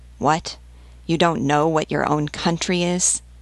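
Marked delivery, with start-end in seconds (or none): none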